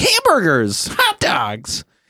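put-on squeaky kid voice. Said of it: "this high squeaky voice".

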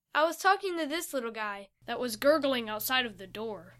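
ordinary delivery, nothing marked

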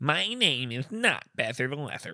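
very slow, every word drawn out. Joking about a nickname, imitating the person it mocks: Matt Besser impression. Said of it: "I made Matt Besser sound like that".

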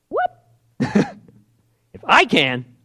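very high, very slow, drawn-out indignant attitude. Showing how one might answer the father: imitating speaking with attitude. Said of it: "I'd probably talk like that".

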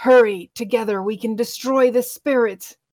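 loud, growling undead corpse voice. Game master voicing a rotting cloaked figure urging the players, growling. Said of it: "it growls".

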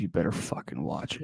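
mock low voice. Retelling how a text exchange went, imitating him in a lowered voice. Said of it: "He's like".

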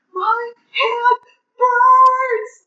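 mock fierce, very high, loud, aggressive shout. Retelling how an audiobook narrator read a line: imitating a loud, aggressive shout. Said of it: "really loudly, really aggressively".

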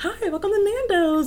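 very high, sweet, bright host voice. Describing greeting people as the host at nando's, higher-pitched, nicer-sounding host voice. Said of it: "I'm like raising the pitch of my voice so I sound nicer".

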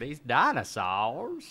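swooping, animated cartoon character voice. Recalling a loved movie voice, imitating the DNA strand voice. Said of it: "who they say did the voice of the, the D N A strand".

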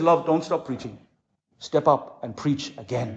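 mock tearful voice, words pushed out through crying. Retelling a wife's words after she was hit: imitating a crying voice. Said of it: "with the crying voice".

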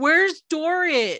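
play-acted, loud, called-out yell. Retelling how a woman called out during a live stream; retelling a yell. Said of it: "she yells out".

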